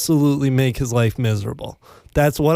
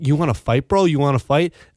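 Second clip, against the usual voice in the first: mock, heated, angry squaring-up tone. Retelling an opponent's challenge after a shove in soccer: imitating an angry opponent. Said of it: "he got really mad".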